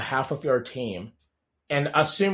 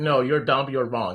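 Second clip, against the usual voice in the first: put-on scolding voice. Comparing a doting mom and a blunt wife: imitating a wife scolding. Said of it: "And my wife is like".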